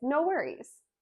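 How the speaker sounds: bright, lively, excited voice, very high-pitched. Explaining an exclamation mark, the speaker says the phrase excited. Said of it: "with some excitement".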